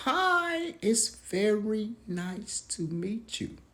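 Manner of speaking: very high, very slow, deliberate. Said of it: "talking all slow, all high pitched".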